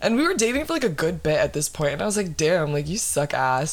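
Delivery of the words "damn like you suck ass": ordinary talk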